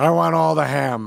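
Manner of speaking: loud, creaky, raspy heavyset-man voice. Quoting a comedian's fat guy bit: Patton Oswalt's fat guy voice. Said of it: "I think it's Patton Oswalt's fat guy".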